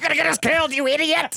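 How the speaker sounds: very high, loud, shrill yelling. Repeating a movie line, imitating Indiana Jones yelling. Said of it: "he's always yelling at Short Round".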